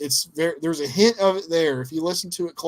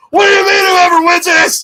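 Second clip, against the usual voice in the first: put-on unhinged wrestler voice, higher and louder; 13 semitones higher, 15 dB louder than usual. Retelling a wrestling promo: unhinged eighties Ric Flair voice. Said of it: "he goes full eighties Ric Flair, unhinged Ric Flair".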